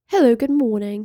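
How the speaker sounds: posh, well-spoken news announcer voice. Describing a lady at a gallery, imitating her greeting in a posh BBC newsreader voice. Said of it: "she sounded like she was going to read the BBC".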